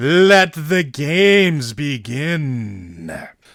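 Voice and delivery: grand, booming ringmaster announcer voice, very slow, drawn-out. Voicing the call that opens the games as the crowd cheers, booming announcer voice. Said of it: "as the voice booms".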